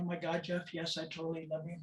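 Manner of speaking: weepy, tearful, crying voice. Retelling a partner's tearful reply to a confession, imitating someone crying. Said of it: "she just blew up crying".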